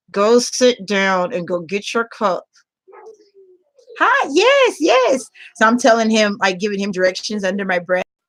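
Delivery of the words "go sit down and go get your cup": usual speaking voice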